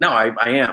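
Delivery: ordinary delivery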